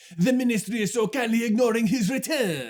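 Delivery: put-on French accent. Quoting a line as it sounds in a performance stuck in your brain, as Jim Dale's French-accented Bellatrix. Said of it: "[French accent]".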